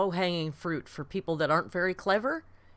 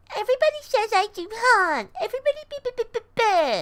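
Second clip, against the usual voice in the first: mock-condescending voice, much higher pitch, louder; 7 dB louder than usual. Arguing about a woman who talks down to her critics, mimicking her condescending voice. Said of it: "she always has to use the most condescending voice".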